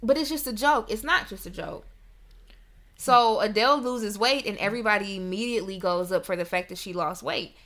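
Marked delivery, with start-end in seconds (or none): 0.0-0.9 raised, dismissive, offhand tone. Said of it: "you know, oh".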